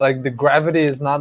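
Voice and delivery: ordinary talk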